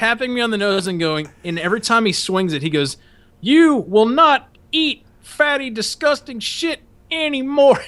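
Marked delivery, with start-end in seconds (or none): 3.4-7.8 very high, slow drill-instructor scream. Retelling a drill instructor tapping him with French toast: imitating a drill instructor screaming. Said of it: "fucking screaming at me".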